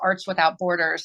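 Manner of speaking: plain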